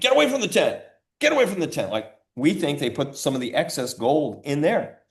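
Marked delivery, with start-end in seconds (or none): 0.0-1.9 play-acted very high, shrill, barked yell. Retelling what an FBI agent yelled near the tent: imitating someone yelling. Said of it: "this F B I agent yelled at me".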